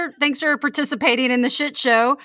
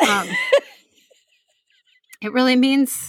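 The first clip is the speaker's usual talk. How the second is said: choked-up, wavering voice catching, near tears. Thanking a listener for being there, getting choked up. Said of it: "she's getting choked up".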